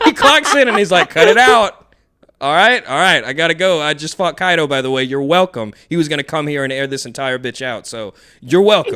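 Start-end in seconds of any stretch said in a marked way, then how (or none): 1.1-5.7 mock casual, unbothered, offhand tossed-off delivery. Describing Shanks clocking in and out after a fight: imitating Shanks nonchalantly. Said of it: "he's doing something so nonchalantly".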